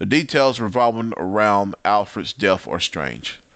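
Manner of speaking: usual speaking voice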